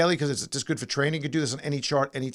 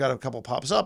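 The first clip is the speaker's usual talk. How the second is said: usual speaking voice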